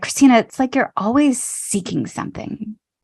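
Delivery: put-on disapproving, judging, critical delivery. Retelling what a companion said to the speaker during a car ride, in a mock-judgmental tone. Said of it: "it felt like a um like a judgmental way".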